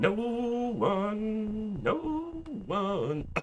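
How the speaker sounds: breaking, cracking voice, high and barely audible. Commenting on a game while playing it: voice cracking. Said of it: "my voice just cracked".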